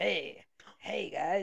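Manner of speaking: put-on rough, creaky talking crocodile voice. Retelling a story, voicing a crocodile greeting travelers: talking crocodile voice. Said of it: "Talking croc?".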